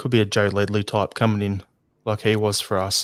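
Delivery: ordinary delivery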